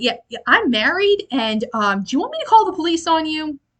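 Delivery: high, alarmed, panicked, freaked-out voice. Retelling a scene where a character gets unwanted attention: imitating someone freaking out. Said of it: "And Mina freaks out".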